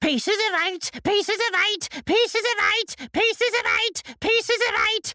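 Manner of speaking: shrill, very high parrot cry, continuous and unchanging. Narrator reads a parrot suddenly calling out of the darkness: Captain Flint's shrill parrot voice. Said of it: "a shrill voice broke forth out of the darkness".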